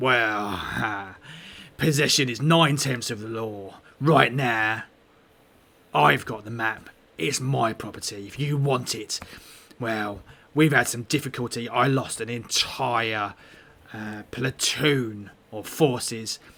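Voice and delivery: rough, gruff goblin-like voice. Describing, then voicing, the second figure in the scene: gruff goblin-like voice. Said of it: "the other voice is like is really gruff and and sounds sounds more goblin-y".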